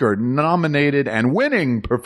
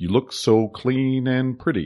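put-on impression voice with odd stops and starts; 3 dB quieter than usual. Showing the key line used to do the impression: William Hurt impression. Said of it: "I try to base it off of the broadcast news line".

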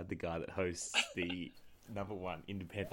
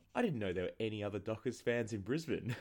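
broad, thick, put-on English accent; 2 semitones higher than usual. Retelling what a stranger at the gym said: imitating a thick English accent. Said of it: "he's had a very thick English accent".

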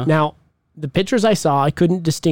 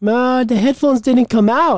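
clumsy put-on Indian accent, pitched up; 8 semitones higher than usual. Telling a joke about a man returning to the doctor, bad Indian accent. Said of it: "my Indian accent is horrible".

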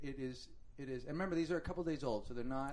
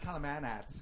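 bad, failed, put-on Australian accent. Joking about what they'd call them, in a bad Australian accent. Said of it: "I wish I could do an Australian accent because I would just go".

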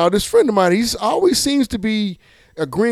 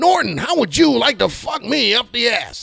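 rough, pitched-up, high character voice; 5 semitones higher than usual. Retelling a joke by imitating an Eddie Murphy stand-up character. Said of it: "I ran into Eddie Murphy character".

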